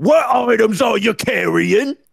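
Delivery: very high, shrill, intense Cockney goblin voice. Mocking voice actors who play a goblin in games: intense Cockney goblin voice. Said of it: "all like the creatures have Cockney accents".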